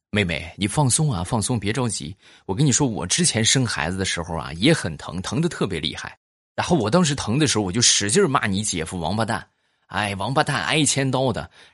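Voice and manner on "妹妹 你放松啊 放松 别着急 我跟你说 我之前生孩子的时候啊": usual speaking voice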